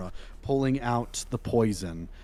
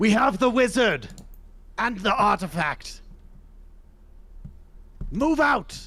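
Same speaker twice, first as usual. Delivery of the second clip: very high, distant shout from below; 11 semitones higher, 3 dB louder than usual. Voicing a figure below who calls to others to leave: shout from below. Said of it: "you hear a shout from below".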